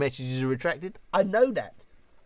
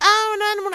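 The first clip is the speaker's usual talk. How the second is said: very high, very loud, shrill silly put-on voice; 8 dB louder than usual. Doing the "oh no, no, no" voice the mum laughed at: put-on "oh no" voice. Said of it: "when I do that sort of voice".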